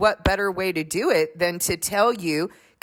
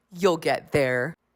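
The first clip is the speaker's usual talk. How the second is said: low, patronizing, condescending tone; 4 semitones lower than usual. Speaker imitates people refusing them a couples' small group, mocking a condescending tone. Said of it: "condescending tone".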